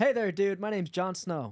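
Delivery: put-on general American accent. Taking turns doing accents with another speaker, asked for an american accent. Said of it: "can you do American?".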